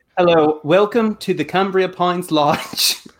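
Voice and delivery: slow, affected, put-on British accent. Asked to do a British accent, greeting guests at a lodge: put-on British accent. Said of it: "using a British accent".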